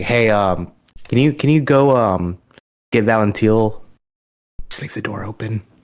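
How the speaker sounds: whispered speech. Playing a character who speaks to Arnu in a game scene: whispering. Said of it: "I'm gonna whisper to Arnu".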